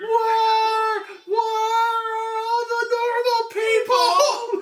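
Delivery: very slow, high, drawn-out shrieking in terror. Acting out a woman at a hotel, imitating someone screaming in terror. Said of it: "just screaming bloody murder".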